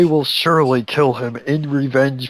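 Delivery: ordinary delivery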